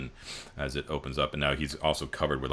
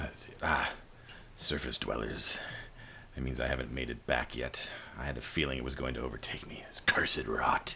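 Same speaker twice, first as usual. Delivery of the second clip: hissing character voice, heavy on the s sounds; 4 dB quieter than usual. Voicing a groggy rot-covered figure waking up: sibilant voice. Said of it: "like, a sibilant voice".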